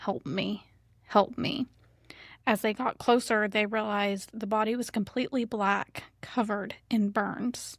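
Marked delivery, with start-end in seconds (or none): 0.0-1.7 very raspy, slow, begging voice. Retelling a burned woman's words from the woods: imitating a raspy plea for help. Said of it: "in a very raspy voice would just start saying".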